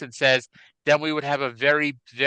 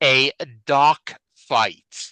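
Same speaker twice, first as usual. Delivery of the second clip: slow, deliberate, carefully enunciated, every sound laid out; 4 dB louder than usual. Announcing a TV segment title, slow, clearly enunciated. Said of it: "I'm going to say this slowly so I, I can enunciate it better".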